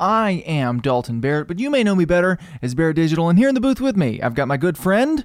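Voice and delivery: very fast, rapid-fire, high-pitched rattled-off delivery. A podcast host introduces himself and his friend in the booth, talking very fast. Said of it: "You said that so fast".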